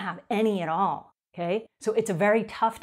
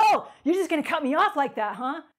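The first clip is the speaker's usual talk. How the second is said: brash, really loud outburst, pitched up, acted out; 7 semitones higher than usual. Describing a stranger who cut in line, imitating a loud outburst. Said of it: "really loudly".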